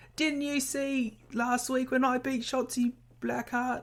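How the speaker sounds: put-on very high, shaky, fumbling Australian accent. Retelling a wrestler's trash talk before her match, in a struggling australian accent. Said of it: "struggling with an Australian accent".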